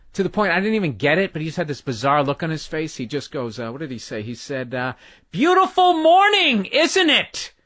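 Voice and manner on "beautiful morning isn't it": shrill, slow, mocking, sarcastic, drawn-out holler. Retelling what a man yelled while you brought a tree down: retelling a sarcastic yell. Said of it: "sarcastic is hell".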